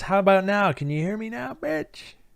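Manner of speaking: shrill, very high talking-dog voice. Joking about a barking dog during a call, voicing the dog. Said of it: "Dog says".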